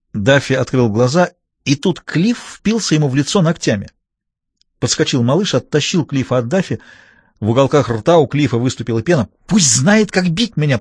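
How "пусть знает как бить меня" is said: hissing delivery. Pulled away after clawing another man's face, a man hisses. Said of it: "прошипел он".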